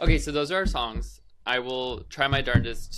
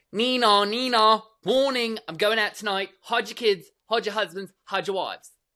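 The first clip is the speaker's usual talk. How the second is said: put-on, pitched-up British girl's accent; 9 semitones higher, 3 dB louder than usual. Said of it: "It is this very British girl".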